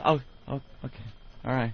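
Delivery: timid, scared, nervous hushed whisper. Retelling a worker's reply after being told that's all: imitating someone talking quietly. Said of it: "Talking all quiet".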